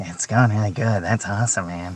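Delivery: put-on whispered voice. Cast member recalling a fellow cast member's reaction after a sketch, whispered Bill Hader impression. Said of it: "he kind of whispered like".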